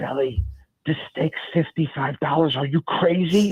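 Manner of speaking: hushed, stage-whispered aside. Retelling what mom said at a steakhouse: imitating mom whispering. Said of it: "she whispered to me".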